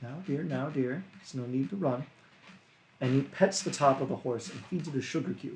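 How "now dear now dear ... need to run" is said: faint, soft, barely-there half-whisper. Voicing a giant calming a runaway horse: faint half-whisper. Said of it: "with a faint whisper in Giantish".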